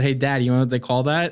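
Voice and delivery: ordinary talk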